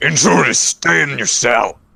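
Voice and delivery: rough shouting voice. An unseen voice yells in Goblin to the intruders in their cell, a bit gruff yell. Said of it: "you hear a yell from a from a bit of a gruff voice".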